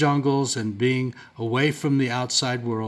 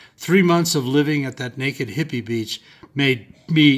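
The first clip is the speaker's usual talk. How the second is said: normal talking voice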